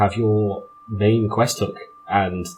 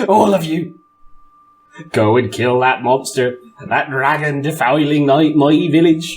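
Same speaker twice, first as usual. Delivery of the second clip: high, shrill, piercing shrieking outburst; 5 semitones higher, 4 dB louder than usual. Voicing a villager who shrieks orders at the players, pointing: shrieking. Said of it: "shrieks at you".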